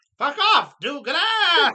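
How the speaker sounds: booming, swooping, belted cartoon-hero voice. Reading a joke aloud on the show, the punchline in He-Man voice. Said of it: "And in He-Man voice".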